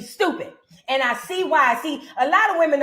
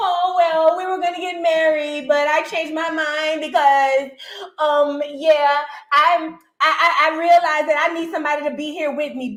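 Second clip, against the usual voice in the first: drawn-out, slow, faltering, hesitant voice; 2 semitones higher than usual. Mocking what Brooke said on the show: imitating Brooke. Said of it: "here you go".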